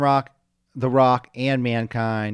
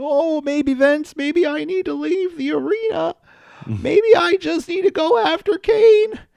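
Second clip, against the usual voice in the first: very high, goofy, cartoon-style slacker voice; 4 dB louder than usual. Retelling what Mankind said to Vince, Mankind impression sounding like Shaggy. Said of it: "my mankind sounds like Shaggy".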